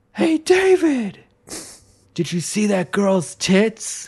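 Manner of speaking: high, drawn-out yell, calling out. Retelling what they yelled out to their brother, retelling a yell. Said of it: "I yelled out to my brother".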